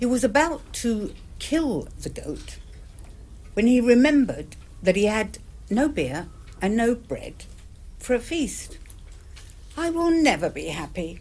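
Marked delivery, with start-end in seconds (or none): 9.7-11.2 sighing, with a sigh. Gimel Ninurta, with no beer or bread for a feast, speaks: sighing. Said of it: "sighed Gimel Ninurta".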